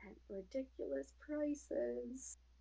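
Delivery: barely audible whispered mutter under the breath. Voicing a parting remark while walking out the door: muttered under breath. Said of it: "under her breath so that only Sage can hear".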